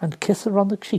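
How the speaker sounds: plain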